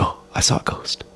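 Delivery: put-on intoxicated voice. Retelling suddenly stopping mid-laugh, imitating being on shrooms. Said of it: "like I'm on shrooms".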